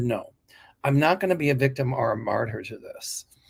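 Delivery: ordinary talk, nothing marked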